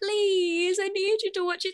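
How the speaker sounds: high, whiny, begging voice. Retelling how she begged the speaker to watch it, mock-whiny voice. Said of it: "she even used her whiny voice like".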